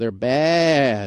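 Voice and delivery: put-on sheep voice. Commenting on car leases, doing an impression of a sheep getting fleeced. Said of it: "that's my impression of a sheep getting fleeced".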